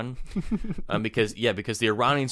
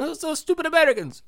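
mock Italian accent, higher pitch; 4 dB louder than usual. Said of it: "Why does he sound Italian?".

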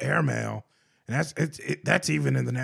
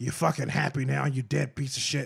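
mock whispering. Retelling what he whispered to a dead guinea pig: imitating someone whispering. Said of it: "whispering in its ear".

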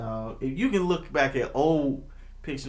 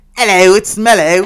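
very loud, high-pitched put-on British accent; 5 semitones higher, 15 dB louder than usual. Giving mellow a voice in a family bit, put-on british accent. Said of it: "He's British".

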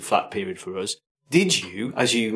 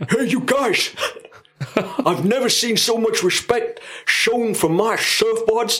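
New York deli-man voice, very high, very slow; 12 semitones higher, 3 dB louder than usual. Imitating what the board maker said about the naked dance: Matt Byerless impression. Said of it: "that's how Matt Byerless talks".

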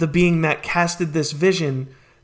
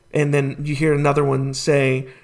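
usual speaking voice

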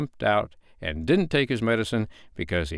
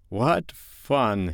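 doubtful, unsure, hesitant. A father, watched reproachfully by his children, speaks doubtfully. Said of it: "he said doubtfully".

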